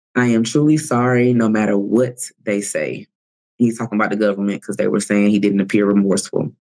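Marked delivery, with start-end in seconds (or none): 0.1-3.0 choked-up, emotional, voice catching. Retelling an apology in court, imitating someone choking up. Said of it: "he starts to kind of choke up".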